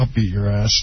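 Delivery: muttering under the breath. Retelling what they said about a woman nearby, retold under-breath mutter. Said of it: "Under my breath".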